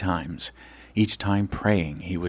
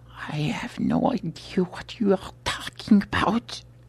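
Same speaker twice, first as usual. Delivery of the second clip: faltering, stammering speech, much higher; 11 semitones higher than usual. A narrator reads the curator answering his interrogator, stammering. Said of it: "the curator stammered".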